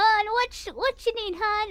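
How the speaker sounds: put-on Southern or Midwest accent on "hun". Speaker shows how someone with such an accent talks: Midwest or Southern accent. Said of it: "if you have a Midwest or Southern accent".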